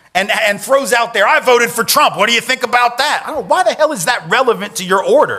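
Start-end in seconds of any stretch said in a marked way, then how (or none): 1.3-3.2 loud, hollered, belligerent yell. Retelling a man's outburst at a Starbucks barista: imitating a man yelling. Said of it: "he starts yelling".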